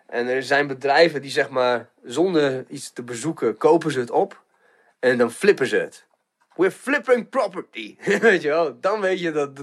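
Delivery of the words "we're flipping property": a little put-on New York accent, pitched up. Quoting what companies in the housing market say, in a new york accent. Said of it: "zo'n New York accentje".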